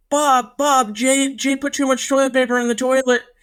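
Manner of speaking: very high, acted, frantic full-panic freak-out. Retelling mom calling dad about a clogged toilet, imitating someone freaking out. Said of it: "She's freaking out. And she goes".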